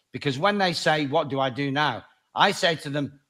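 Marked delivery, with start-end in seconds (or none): none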